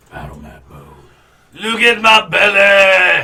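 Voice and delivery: very high, loud, slow bellow, "belly" stretched out. Joking about the others' belly line, saying it in Fat Bastard voice. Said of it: "you have to do it in the fat bastard voice".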